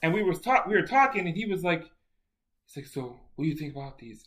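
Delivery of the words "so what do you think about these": very soft-spoken voice, much quieter. Retell what a man asked you while you were talking together, in a very soft voice. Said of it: "Very, very soft voice".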